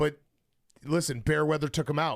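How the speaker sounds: ordinary delivery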